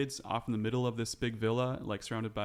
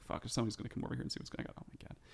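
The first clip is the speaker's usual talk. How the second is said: fast, hushed muttering under the breath; 8 dB quieter than usual. A game master voices a stable owner who sees the broom, cursing to himself. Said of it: "starts cursing to himself".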